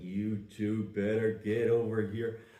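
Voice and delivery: put-on tough western movie cowboy voice. Retelling how a man spoke when he went full John Wayne: John Wayne voice. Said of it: "he would speak in this John Wayne voice, like".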